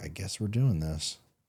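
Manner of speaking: hearty, enthusiastic delivery. Retelling own reaction to hearing she was pregnant, retelling own reply with gusto. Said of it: "that same gusto in my voice".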